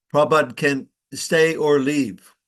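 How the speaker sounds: normal talking voice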